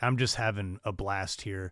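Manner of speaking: normal talking voice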